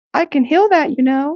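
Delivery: pixie voice, pitched very high. A game master voicing a pixie speaking directly to a player, in a pixie voice. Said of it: "the voice of the pixie talking directly to you".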